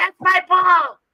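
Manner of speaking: screeching, very high, loud, shrill yell. Retelling what a woman at the game was screaming: imitating someone screaming and yelling. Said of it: "screaming and yelling".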